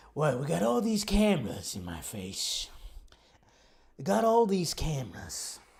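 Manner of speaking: bad, weak put-on voice with swooping pitch. Describing a film set with cameras: Jason Statham impression. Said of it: "my sad attempt at doing a Jason Statham impression".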